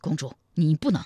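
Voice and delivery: plain reading voice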